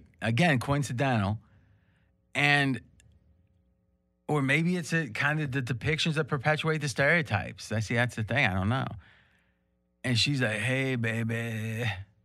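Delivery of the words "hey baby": put-on husky voice. Retelling how a woman greeted someone, imitating a husky voice. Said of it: "Real husky voice".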